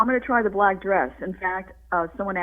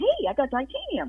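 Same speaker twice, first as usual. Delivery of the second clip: put-on raised voice, much higher and slower; 7 semitones higher than usual. Speaker retells talking to a man after a hip replacement, imitating own voice going up. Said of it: "my voice would kind of go up".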